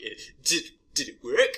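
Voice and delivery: goofy put-on character voice, high and loud. Quoting a line from the first Thor movie to a co-host in a funny put-on voice. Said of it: "These voices you have".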